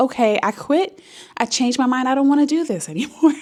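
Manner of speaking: mock tearful, pleading delivery while crying. Retelling a call to the birthing center during labor: retelling crying on the phone. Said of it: "this time I'm, like, crying".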